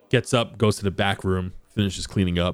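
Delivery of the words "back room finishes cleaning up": ordinary talk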